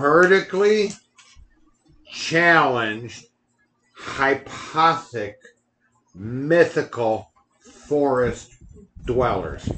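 slow, drawn-out, deliberate word-by-word enunciation. Repeating the big words he used with alcohol in his system, said very slowly. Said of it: "You had to say it that slow".

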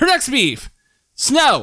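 very high, swooping screaming outburst. Reading out the next complaint to the others: screaming. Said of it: "Why are you screaming?".

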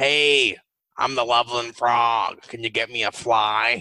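put-on voice, as if speaking through a stoma. Showing listeners how the creature talks, in a Loveland frog voice. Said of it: "I'm squeezing where my stoma would be while I'm doing this".

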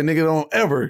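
normal talking voice

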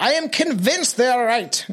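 put-on German accent. Speaker quotes what a boy added about his captors, in a fake German accent. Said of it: "Now I'm speaking German".

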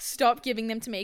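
normal talking voice

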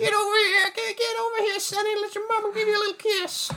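put-on very high, creepy old-lady character voice. Doing a grandma voice while discussing Into the Spider-Verse: grandma-Herbert the Pervert voice. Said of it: "that was like a combination grandma and Herbert the Pervert".

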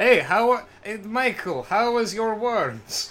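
put-on thick, slow, heavy Russian accent. Act out the Lost Boys worm scene to Michael as Kiefer Sutherland in a thick Russian accent. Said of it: "in a thick Russian accent is like".

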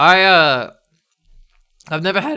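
speaking with mouth full, chewing. Asked how he feels about flying, the speaker answers while talking with mouth full. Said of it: "Sorry, I'm eating cheese sticks".

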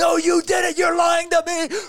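put-on yelling. Retelling a customer's accusation in a dispute: imitating someone yelling. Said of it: "he's sitting there yelling at me".

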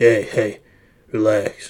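put-on deep voice. Telling listeners to relax, in a put-on deep voice. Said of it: "Gotta get deep voice a little bit".

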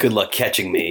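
put-on smug villain voice. Retelling how a villain taunts the hero from a boat: imitating a smug villain. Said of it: "so smug".

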